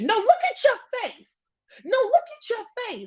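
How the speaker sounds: mock screaming, very high, shrill and swooping. Acting out a movie character's scream while watching a fight: Debbie screaming impression. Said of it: "Debbie screaming at Felicia".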